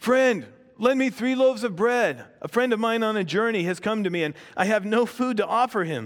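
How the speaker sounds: pleading voice, high and loud.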